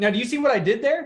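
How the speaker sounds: usual speaking voice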